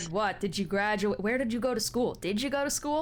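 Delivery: gruff, impatient, prodding man's voice. A man waiting in line pressures someone counting coins, as an impatient gruff man. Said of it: "a very impatient, gruff man".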